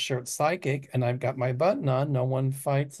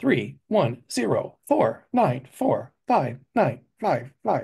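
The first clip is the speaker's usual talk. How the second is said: put-on robotic, synthesized computer voice. Repeating Arthur's phone number for listeners: computer voice. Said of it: "That's my computer voice".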